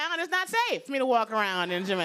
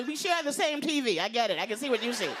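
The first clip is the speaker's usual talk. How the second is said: usual speaking voice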